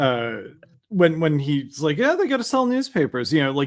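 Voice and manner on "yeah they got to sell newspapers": acted, very high, above-it-all smug tone. Retelling what another person said in a clip: imitating a smug tone. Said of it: "just how smug he sounds".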